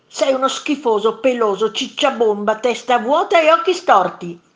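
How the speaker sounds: loud, full-throated storybook monster yelling. Narrator reading a story, one monster throwing rocks at another: shouting. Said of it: "gridò il primo mostro".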